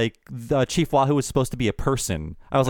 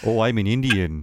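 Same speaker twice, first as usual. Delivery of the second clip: slight Canadian accent; 4 semitones lower than usual. Mocking how characters sound in media: imitating a Canadian-sounding media accent. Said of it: "Indians sound like they're from Canada".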